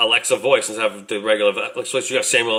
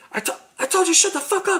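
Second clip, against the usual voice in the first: very high-pitched put-on delivery. Riffing on Alexa getting a new voice: Samuel Jackson voice. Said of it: "it's Samuel Jackson voice?".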